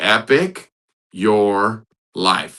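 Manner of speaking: very slow, deliberate, each word drawn out. Livestream host spelling out the community's motto to viewers, very slow. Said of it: "Let me say it real slow".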